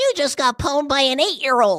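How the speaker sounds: put-on very high, very loud taunting little-kid voice. Speaker taunting players in an Xbox lobby, little kid voice. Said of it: "I would do like a little kid voice".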